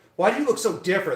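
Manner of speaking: sassy, attitude-laden delivery. Retelling a question from a person at work: imitating someone with attitude. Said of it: "kind of like this attitude".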